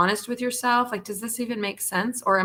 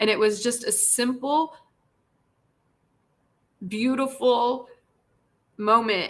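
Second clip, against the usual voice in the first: crying while talking, tearful; 2 semitones higher than usual. Sharing a story with viewers, crying while talking. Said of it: "I know now I'm crying".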